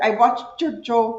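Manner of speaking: put-on English spoken with a Cuban accent. A guest quotes their mom, imitating a Cuban accent. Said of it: "that's how Cubans say".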